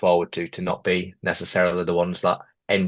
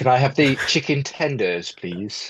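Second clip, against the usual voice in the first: polite, higher-pitched put-on telephone voice; 6 semitones higher than usual. Asked about putting on a phone voice in Orlando, showing the phone voice. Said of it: "phone voice on".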